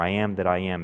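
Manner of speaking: ordinary talk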